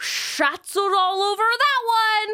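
put-on very high, shrill, loud, far-carrying New Mexican accent shout. Retelling the college coach calling out after a strikeout, loud New Mexican accent. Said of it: "who has the loudest New Mexican accent".

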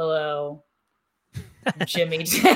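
attempted deep voice. Answering how deep the voice can go, Jimmy Day impression. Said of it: "I try to do a Jimmy Day impersonation".

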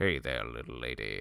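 very low, rough, robotic voice. Talking about the iconic voice from Clone Wars, do a kind of robotic Cad Bane voice. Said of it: "just kind of robotic".

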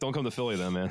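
ordinary talk

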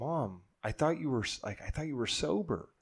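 acted voice full of heartbreak, stumbling over words. Retelling a sister confronting her mom about a receipt: imitating a heartbroken voice. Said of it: "with, like, heartbreak in her voice".

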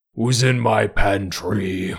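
deep, low, guttural, throaty voice. The narrator voices an imposing figure standing in the doorframe; deep, guttural voice. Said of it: "you hear a deep, guttural voice say".

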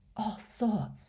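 said on a breath. Reading the story, the narrator gives a boy's reply to Dumbledore, breathed. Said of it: "breathed Riddle".

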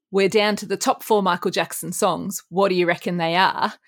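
normal talking voice

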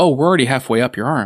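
ordinary talk

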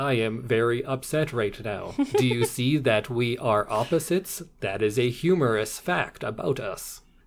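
flat, mechanical, robot-like monotone. Describing the other half of a couple, unlike the boisterous one: imitating a robotic talker. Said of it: "the other one just talks like this".

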